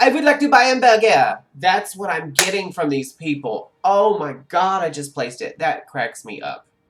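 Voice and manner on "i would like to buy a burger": very loud, high, yelled put-on French accent. Having just realized what the accent recalls, do the Steve Martin in the Pink Panther accent. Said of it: "Steve Martin in the Pink Panther when he's like".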